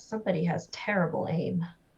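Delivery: grumbled, muttered under the breath to oneself. Looking up at the sky in character, muttering under breath. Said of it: "kind of under my breath".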